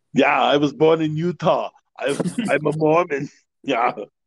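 put-on German accent, pitched high. Act out a True Lies character supposed to be a red-blooded American, in a put-on German accent. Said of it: "You sound like you have a German accent".

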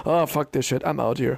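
ordinary delivery

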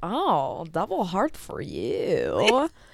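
very drawn-out, slow, swooping signer's voice. Retelling what the signer said, asked to do it in his voice. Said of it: "say it in the voice".

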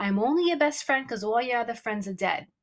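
ordinary talk, nothing marked

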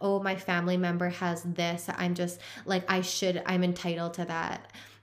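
ordinary talk

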